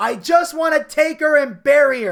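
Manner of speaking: all-out loud, high-pitched scream. Retelling a wrestler grabbing his mother's body: imitating someone screaming. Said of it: "and he's screaming".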